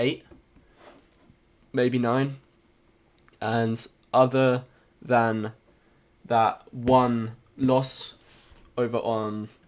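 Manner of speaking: very slow, flat monotone robot voice. Recapping how many trades they have taken: talking like a robot. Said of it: "Why am I talking like a robot?".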